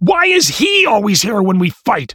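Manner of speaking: very high, shrill, piercing shouting yell. In a speeding car, Stepmom interrupts a screaming match to point at the narrator, shouting. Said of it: "She shouted".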